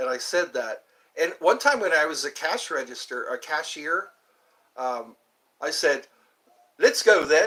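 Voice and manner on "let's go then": loud, pitched-up, put-on British accent. Retelling what he said to a customer while working as a cashier, fake British accent. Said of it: "I didn't know she was British".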